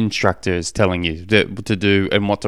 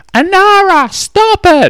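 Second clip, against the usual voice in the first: put-on high, loud kid's yell. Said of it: "my son's ye-, yelling out".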